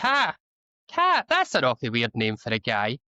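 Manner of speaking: put-on elderly gentleman voice with swooping pitch. Retelling a phone call, the speaker quotes an older gentleman caller in an old man voice. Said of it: "he's got the old man voices you hear".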